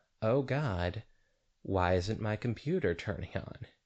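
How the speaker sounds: ordinary talk, nothing marked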